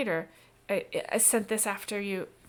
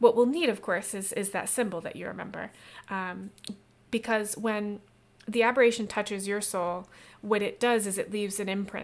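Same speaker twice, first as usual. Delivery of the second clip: ordinary delivery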